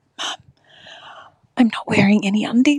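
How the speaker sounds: hushed stage whisper, like a secret. Retelling how a daughter leaned in at the show: imitating a quiet whisper. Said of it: "very quietly whispered".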